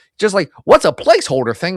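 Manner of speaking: fumbling, high-pitched, loud voice. Attempting a voice before giving it another try, terrible Stan Lee impression. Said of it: "that was a terrible Stan".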